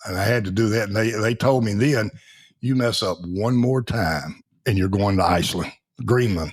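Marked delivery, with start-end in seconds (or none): none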